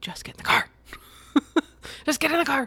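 through clenched teeth. Speaker retells what they said getting everyone into the car, through clenched teeth. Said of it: "I am talking through my teeth so much".

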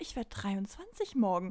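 put-on dumbfounded manner. Retelling an id check at the checkout, acting out her answer to the cashier: mock-flustered, totally baffled. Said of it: "Und sie so völlig verdattert".

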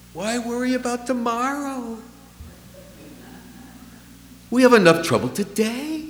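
put-on Yiddish-inflected accent.

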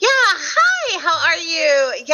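very slow, high, cheerful sing-song customer service voice. Showing the voice they use at a McDonald's drive-thru, higher-pitched, happier customer service voice. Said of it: "changing that to a little bit of a higher pitched, happier tone".

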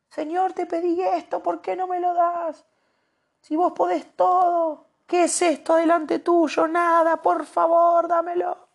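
very high, acted-out, pleading tantrum voice. Describing how people react to God, the speaker acts out a prayer: imitating a tantrum. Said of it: "hacemos berrinches".

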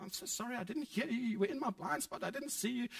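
play-acted flabbergasted, high, flustered voice. Retelling a driver's apology to people at her car window, imitating a flabbergasted apology. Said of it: "she's totally flabbergasted".

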